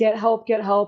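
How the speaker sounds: tearful pleading, crying through the words. Retelling a crash, lying by the road, imitating crying while pleading. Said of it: "I was just cry-, crying, saying".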